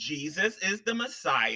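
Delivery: slow, soft, deliberate, drawn-out word-by-word delivery. Arguing over a verse, the speaker spells out a point to the other person: said real slow. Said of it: "I'll say this real slow like for you".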